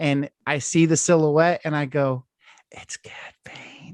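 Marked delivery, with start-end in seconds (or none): 2.7-3.9 hushed whisper, under the breath. Retelling spotting a character while watching at two A M: retelling a whisper under breath. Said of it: "to myself under my freaking breath".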